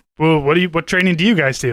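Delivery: plain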